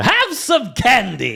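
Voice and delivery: very high-pitched, cartoonish voice. Praising a voice performance in Wreck-It Ralph: King Candy voice. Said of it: "watch Wreck-It Ralph and tell me Alan Tudyk".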